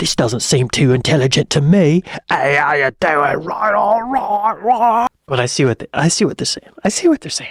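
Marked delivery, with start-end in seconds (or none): 0.0-5.1 fake, dim-sounding, put-on British accent. Trying out how an accent comes across, the speaker talks in a put-on British accent. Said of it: "What about a British accent like this?".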